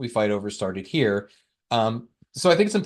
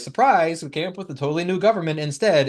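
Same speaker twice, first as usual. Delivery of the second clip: sarcastic, pitched-up, mock-surprised tone; 5 semitones higher than usual. Retelling what the delegates said after four months: sarcastically imitating the delegates.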